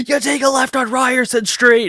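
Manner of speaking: put-on ghost voice, shouting. Retelling how he shouts at him every time he comes through, imitating someone shouting. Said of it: "just shouting at him every time he comes through".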